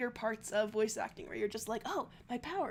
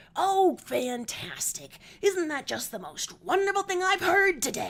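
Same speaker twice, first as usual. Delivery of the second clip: loud, angry, swooping acted rant, tone varying; 4 semitones higher, 10 dB louder than usual. Showing how a sister voices Karkat: imitating sister's angry Karkat voice. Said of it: "she's a lot more like".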